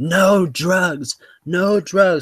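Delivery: very slow, drawn-out, high-pitched scream. Retelling how the brain surgeon screamed at him: imitating a doctor screaming. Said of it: "literally screaming at me".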